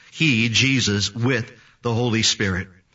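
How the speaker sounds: he and with stressed hard. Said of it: "So the he and the with is important".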